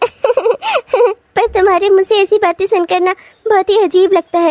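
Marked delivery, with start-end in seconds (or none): 1.4-4.5 talking through giggles and laughter. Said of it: "ये पागलों की तरह क्यों हंस रही हो?".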